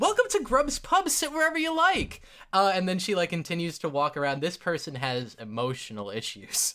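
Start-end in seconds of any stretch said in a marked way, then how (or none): 0.0-2.2 warm, friendly voice, very high. Voicing a server girl greeting arriving guests: warmest smile, very warm greeting. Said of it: "with the warmest smile you've ever seen".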